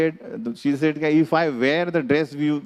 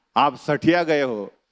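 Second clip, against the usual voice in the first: ordinary talk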